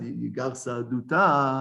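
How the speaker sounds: plain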